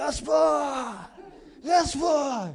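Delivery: bawling shout, very high, very loud and shrill. Describing how some people pray, acting out one who yells: yelling to God. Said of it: "кто-то орет".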